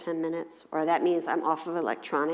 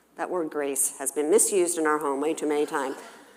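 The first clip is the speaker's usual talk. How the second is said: ordinary talk, nothing marked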